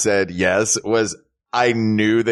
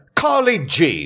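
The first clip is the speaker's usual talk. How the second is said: failed southern accent that comes out British; 6 semitones higher than usual. Trying out saying a Southern name aloud, accent that came out British. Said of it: "you did it British".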